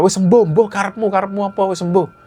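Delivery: exasperated, furious, high-pitched angry ranting scold. Retelling a mother's outburst while she keeps failing to cook: imitating someone ranting angrily. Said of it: "Beliau itu marah-marah".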